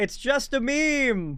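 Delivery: high, slow, drawn-out mock yell. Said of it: "the funniest thing you can ever yell to a cop".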